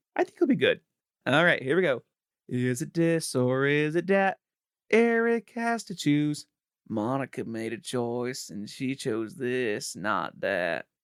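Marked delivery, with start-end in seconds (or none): 2.5-10.8 botched delivery with every word dragged out. Introducing a this-or-that game to another speaker: worst Bill Clinton impression. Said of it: "That's the worst Bill Clinton impression".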